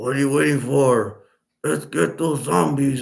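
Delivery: cheesy, overacted tough action-hero voice. Mocking how the main hero talked, overacted tough-guy voice. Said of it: "he would talk like this".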